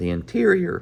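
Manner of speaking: very high, cracking break in the voice. Working through a math explanation, the speaker has a horrible voice crack. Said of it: "that's horrible voice crack".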